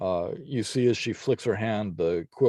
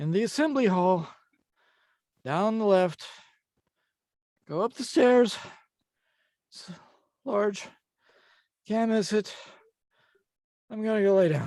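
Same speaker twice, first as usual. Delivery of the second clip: breathless, light-headed, very high-pitched, winded and dizzy; 13 semitones higher than usual. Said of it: "so dizzy".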